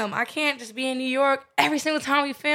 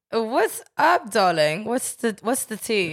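fake British accent, lower pitch; 4 semitones lower than usual. Host greeting a guest on the show, fake british accent. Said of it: "talk with this fucking accent the entire time".

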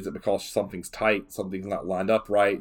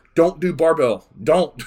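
very loud, high, insistent raised voice; 8 semitones higher, 9 dB louder than usual. Giving listeners advice about exercises that hurt: raised voice. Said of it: "I raise my voice".

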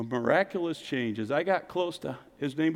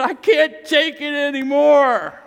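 high, loud, fed-up, exasperated outburst. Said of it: "they just said".

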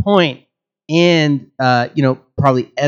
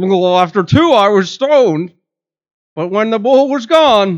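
put-on dog voice, much higher; 8 semitones higher, 4 dB louder than usual. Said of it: "give me what somebody thinks is a dog voice".

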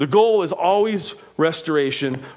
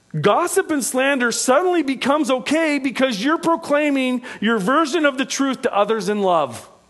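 higher-pitched sarcastic delivery. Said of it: "Do you hear my sarcasm in that?".

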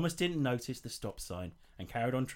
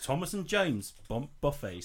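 ordinary delivery

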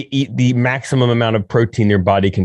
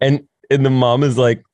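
plain

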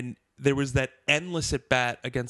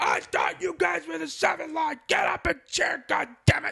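put-on very high, raw, rough drunken yelling. In the ninth inning, Kevin stands and yells at the quiet section; imitating Kevin screaming. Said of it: "just starts screaming".

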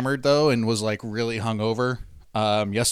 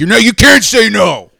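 mock-angry outburst, much louder, higher pitch; 10 semitones higher, 13 dB louder than usual. Retelling how a man reacts when someone refuses what he hands them, mock-angry demand. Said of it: "He gets like really pissed off".

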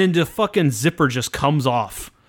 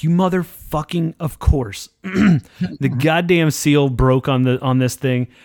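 normal talking voice

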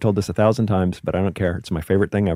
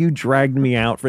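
acted, pitched-up, pissed-off, angry shouted yell; 5 semitones higher than usual. Retelling a complaint yelled from stage: imitating own yelling. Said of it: "I just yelled at her for ten minutes".

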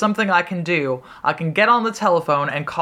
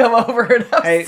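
mock sobbing, high, loud, tearful pleading; 6 semitones higher, 5 dB louder than usual. Retelling what a feverish, nauseous man said while crying, imitating someone crying. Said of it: "He's nauseous and crying, and he's like".

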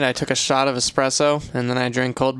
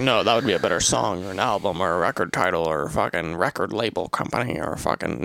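mocking imitated voice, lower pitch; 6 semitones lower than usual. Imitating how the other speaker always reacts: mocking imitation of the other speaker. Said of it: "You're like".

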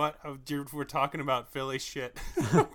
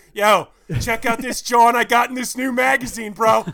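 put-on very loud, high-pitched North Philly accent; 9 semitones higher, 13 dB louder than usual. Describing an accent mixing Philly and Delco, imitating Poe's Philly accent. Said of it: "Poe just being like".

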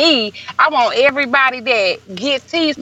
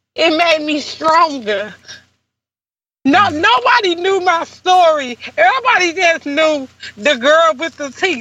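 voice choking up, on the edge of crying; 4 semitones higher than usual. Telling her own story of what broke her down, about to cry. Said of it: "Like I'm about to cry now".

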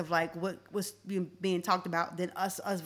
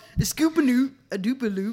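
exaggerated put-on Baltimore accent; 5 semitones higher, 9 dB louder than usual. Mocking how Baltimore people talk, in a mock Baltimore accent. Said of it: "Baltimore needed to tighten up".

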